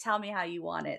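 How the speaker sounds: put-on quiet character voice. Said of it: "the quiet voice that had countless".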